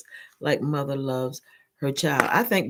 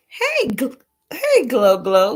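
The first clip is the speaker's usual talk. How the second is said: high, loud words broken up by hiccups; 8 semitones higher, 7 dB louder than usual. Giving advice about prayer and judgment, hiccuping. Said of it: "got the hiccups".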